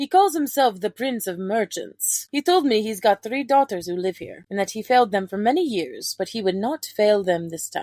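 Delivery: put-on laid-on, vague Russian accent. Imitating a character's lines from an audio drama: Draken's accent, sounding Russian. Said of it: "I feel like I went more Russian with that".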